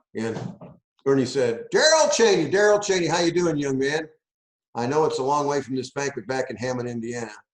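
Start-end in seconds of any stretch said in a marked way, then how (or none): 1.8-4.1 loud called-out yelling. Retelling how a man yelled out to the speaker before packed stands, imitating a loud yell. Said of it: "he yells out real loud".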